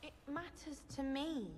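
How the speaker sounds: affronted tone. Answering another character in a game scene, sounding offended. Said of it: "you sound offended".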